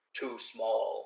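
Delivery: very rough, harsh, coarse grunting voice. Describing a scene where two figures bicker, quoting one; very rough voice. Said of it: "in a very rough voice".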